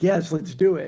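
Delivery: desperate, all-in eager voice. Retelling own answer when asked about fixing the problem: imitating own desperate reply.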